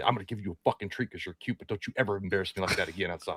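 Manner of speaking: seething, furious, very hushed, quiet half-whisper. Retelling picking up the puppy and scolding it: imitating a furious half-whisper. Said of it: "whisper furiously".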